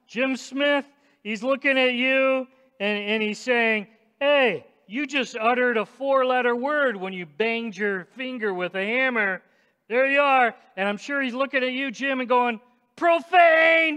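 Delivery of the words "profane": loud, high-pitched, accusing shout. Speaker acts out someone watching Jim and calling him out, mock accusing shout. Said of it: "And just shout".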